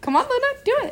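very high, coaxing pet talk, rising way up.

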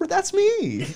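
giddy, excited voice. Retelling how a teacher reacted to hearing her name: imitating someone giddy. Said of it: "got all giddy".

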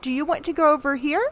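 put-on condescending, high baby-talk voice. Imitating an older person talking to a younger non-English speaker, in baby talk. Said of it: "they tend to talk to them like they're a baby".

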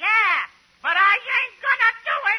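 put-on loud, high, nasty little bratty kid voice. Speaker playing both parts in a scene, answering as Sebastian. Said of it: "I'm going to play both parts".

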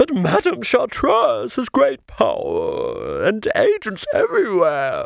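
grand, sweeping, swooping high voice. Narrator reads the chaise-longue sea lion's reply to the two boys, grand Clarissa sea lion voice. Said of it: "The chaise-longue sea lion heaved her portly upholstered body before the two boys and said, rather grandly".

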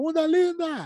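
high, loud, yelled-out cheering exclamation. Retelling what someone shouted on going in: imitating someone shouting. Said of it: "Aí ele gritou assim".

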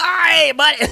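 shrill, loud, high cartoon holler. Discussing a cartoon's voice actor, a speaker imitates the character: Sheen impression. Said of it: "You sounded like the guy at the beginning of SpongeBob".

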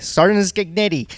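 put-on Pennsylvania accent. Retelling how a show booker talked on the phone: imitating a strong Pennsylvania accent. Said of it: "this strong Pennsylvania accent".

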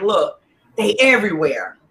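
ordinary talk, nothing marked

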